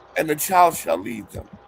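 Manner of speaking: usual speaking voice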